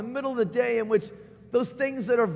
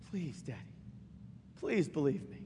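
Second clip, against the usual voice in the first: put-on whispered, plaintive, pleading little child voice; 8 semitones lower, 13 dB quieter than usual. Retelling a child's plea to his father: imitating a plaintive pleading child. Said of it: "the most plaintive, pleading".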